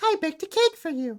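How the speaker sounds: very high-pitched put-on princess voice. Showing how a character sounds in an old game: imitating Princess Peach's voice. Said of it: "it's very high-pitched".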